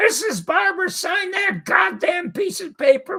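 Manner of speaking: very high, screeching yell. Retelling how the theater people screamed at a wife to sign: imitating people screaming. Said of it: "they start screaming at her".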